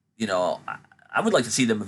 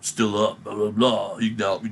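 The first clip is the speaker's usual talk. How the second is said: put-on, menacing wrestler-style voice. Retelling a wrestler's trash talk in the match: imitating Damian Priest's menacing voice. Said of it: "He's menacing, kinda sounding".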